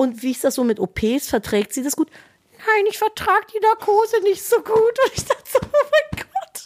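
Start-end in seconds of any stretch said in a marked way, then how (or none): 2.6-4.8 put-on dog voice, pitched high. Answering a question on the dog's behalf, in a put-on voice for the dog. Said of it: "für ihren Hund zu sprechen mit einer verstellten Stimme".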